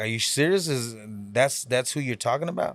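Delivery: ordinary delivery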